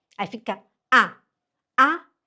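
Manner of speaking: A of Abend stressed, held long and loud. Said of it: "a sílaba forte fica no A".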